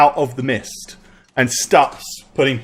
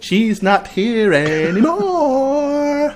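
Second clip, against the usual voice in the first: put-on eerie, very high, creepy little-girl voice; 10 semitones higher than usual. Game master voicing a little girl answering the players' questions, creepy little girl voice. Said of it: "So creepy".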